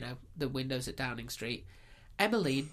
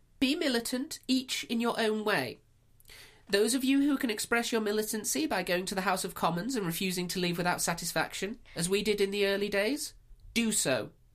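put-on proper woman's voice, pitched high; 8 semitones higher, 4 dB louder than usual. Asked by the other speaker to read an extract of her speech, proper woman voice. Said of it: "in your woman voice, proper woman voice".

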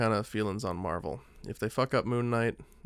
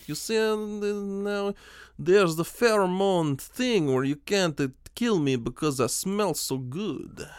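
fake Russian accent, Cockney-tinged, drawn-out, loud, high; 9 semitones higher, 5 dB louder than usual. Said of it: "I'm a really Cockney man, but I do a bad Russian accent".

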